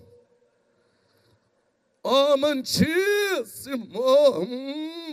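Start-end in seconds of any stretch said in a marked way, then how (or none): 2.0-5.1 very slow, drawn-out mock tenor voice. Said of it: "Igual um tenor".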